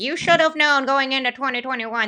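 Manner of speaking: put-on smug, arrogant know-it-all tone. Repeating own advice to fantasy managers: mock arrogant tone. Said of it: "like I'm sounding so arrogant right now".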